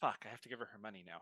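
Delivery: muttered under breath. During a tabletop game, a character mutters under his breath. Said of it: "Lance under his breath goes".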